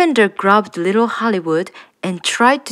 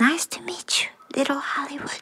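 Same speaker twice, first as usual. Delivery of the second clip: hushed, soft, very quiet whisper; 6 semitones higher, 9 dB quieter than usual. A curious three-year-old greets a little creature, whispered. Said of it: "She whispered".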